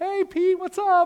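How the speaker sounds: very high, loud, all-bubbly cheerful voice. Retelling Sapphira greeting Peter: acting bubbly and happy. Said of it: "all bubbly and happy".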